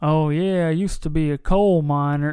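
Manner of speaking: drawn-out Southern-style speech. Reviewing a movie, mocking an actor's accent: Charlie Heaton's Southern drawl. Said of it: "doing this like Southern draw accent".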